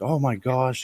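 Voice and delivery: mock flirty excitement. Retelling a woman's reaction to hearing his job, mock flirty interest. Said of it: "acting all interested, really flirty".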